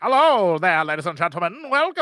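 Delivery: put-on old-fashioned, old-timey microphone announcer voice. Showing how a voice sounds through the microphone: old-timey microphone announcer voice. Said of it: "like an old-timey".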